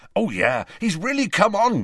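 proud voice, pitched very high. Speaking of how a giant has come on, proudly. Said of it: "said Hagrid proudly".

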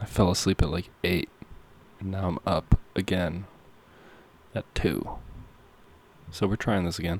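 hushed, quiet voice. Talking at almost 2 a.m. in a new apartment, speaking quietly. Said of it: "I have to be quiet right now because it's almost 2 a.m".

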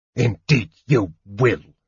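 pained speech through clenched, gritted teeth. A wounded officer answers Sturm; through teeth clenched in pain. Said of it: "the officer said through teeth, clenched in pain".

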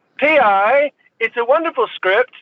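put-on called out high-pitched in an Australian accent. Retelling what the director called out between takes: imitating Simon Windsor's Australian accent. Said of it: "Australian bloke".

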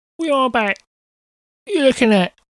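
put-on working-class accent. Describing how a character would talk, put-on lower-class accent. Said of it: "She'd have like a real sort of very lower class accent".

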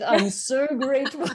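grudging, forced, teeth clenched tight. Describing forced gratefulness, the speaker acts it out through gritted teeth. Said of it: "I'm sort of like gritting my teeth".

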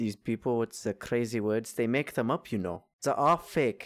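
put-on German accent. Speaker joking with a co-host about country names, in a german accent. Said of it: "Why are you making a German accent?".

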